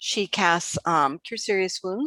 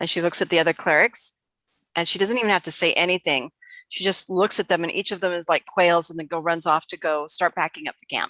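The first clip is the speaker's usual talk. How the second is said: plain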